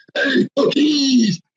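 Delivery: very high-pitched, greedy puppet voice. Speaker showing how to imitate Muppet voices, does a Cookie Monster voice. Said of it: "I can do the cookie myself".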